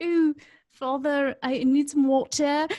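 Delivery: put-on proper British accent. Imitating Cooper asking for water: Cooper's proper British accent. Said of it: "Cooper has a British accent".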